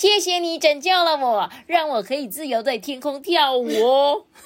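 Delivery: high-pitched silly voice. Telling a story, the narrator voices the fairy thanking another character: Aurora Fairy voice. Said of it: "好鸡的声音啊".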